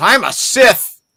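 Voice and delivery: very high, loud, bratty kid's tantrum, acted. Retelling a little kid stomping his feet after being called a Jedi: imitating a stomping kid's tantrum. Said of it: "he just stomps his feet and goes".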